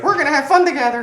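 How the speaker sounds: put-on shrill, very high, very loud little girl voice. Speaker retells a creature mimicking a voice, in a little girl's voice. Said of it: "hear like a little girl's voice".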